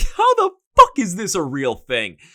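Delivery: incredulous, half-laughing, swooping exclamation, high and loud. Retelling own reaction while writing album notes: imitating own past laughing. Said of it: "Laughing like".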